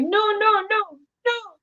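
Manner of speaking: put-on very high, drawn-out, distressed, upset little girl voice. Parent acts out her daughter's reaction to pretend crying: imitating an upset child. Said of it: "she'll get really upset".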